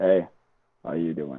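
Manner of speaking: very deep, low, sunken natural voice. Speaker shows his real voice after explaining he pushes it out, very deep voice. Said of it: "Nobody can really hear me because it's too deep".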